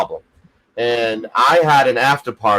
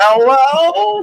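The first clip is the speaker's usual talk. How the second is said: very high, stretched-out, drawn-out yell; 5 dB louder than usual. Retelling falling off a chair and calling out to the others: imitating own past yell. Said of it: "flipping over and yelling".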